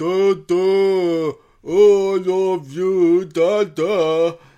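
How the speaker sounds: booming, loud, high, dopey lumbering ogre voice. Retelling how the son shambles over to him and speaks: imitating the ogre-like son's voice. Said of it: "he talks just like that".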